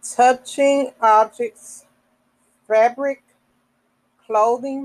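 slow deliberate reading. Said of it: "I'm reading this slow so we can understand".

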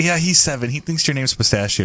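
ordinary talk

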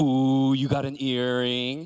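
slow, put-on, judging, disapproving teasing tone. Retelling youth kids reacting to a man's new earring, mock-judgmental tone. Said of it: "came up to him with a judgmental tone".

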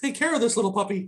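high, prissy, girly put-on voice. Retelling what Shane said getting out at the hotel, in Shane's girly voice. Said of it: "says in his girly voice".

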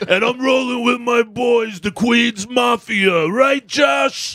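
mock drunken boasting. Retelling a drunk acquaintance threatening the whole room: imitating a very drunk man. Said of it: "he used to be fucking ridiculously drunk".

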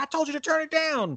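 mock, very high, exasperated scolding yell. Retelling a mom catching her son playing records too loud: imitating a yelling mom. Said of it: "his mom was yelling at him".

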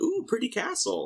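very high little burst. Retelling Marion's reaction on seeing the Jedi Temple: imitating Marion. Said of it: "she saw the Jedi Temple and goes".

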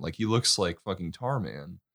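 ordinary delivery

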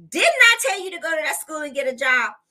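stern, unkind tone. Retelling what God said aloud in the car: imitating a stern, not-nice voice. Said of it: "this was not a nice, kind voice".

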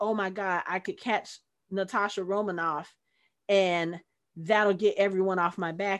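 normal talking voice

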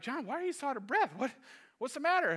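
laughing through the words. Retelling what the guides asked while chuckling: imitating someone chuckling while talking. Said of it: "they're kinda chuckling like".

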